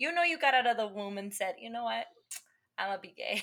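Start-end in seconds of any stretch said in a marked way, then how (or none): 1.6-3.4 sarcastic, play-acted put-on voice. Mocking a belief by acting out a baby leaving the womb: sarcastic mock quote. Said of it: "I'm being sarcastic".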